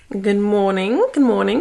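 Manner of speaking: loud, sudden, put-on British accent. Opening a morning update with a greeting, in a british accent. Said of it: "why did I say that in a British accent?".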